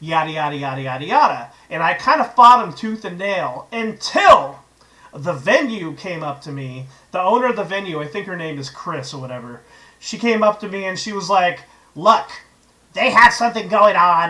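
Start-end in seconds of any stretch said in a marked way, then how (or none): 12.0-14.3 put-on smoker's voice. Retelling how the venue owner told them to give up their spot, imitating Chris's cigarette voice. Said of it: "this is kind of how she sounded".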